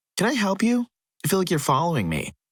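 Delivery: loud, pointed and high. Retelling confronting a man who kept following, imitating saying it loudly. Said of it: "said really loudly".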